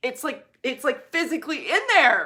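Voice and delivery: emphatic, loud, high-pitched shouting. A speaker explaining something to listeners, yelling without meaning to. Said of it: "I'm yelling now".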